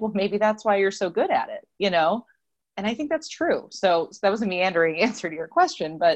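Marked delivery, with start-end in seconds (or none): 0.0-2.2 mock-deadpan, flat delivery. Retelling what someone answered when she called herself a train wreck, retelling a deadpan reply. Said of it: "very deadpan was just like".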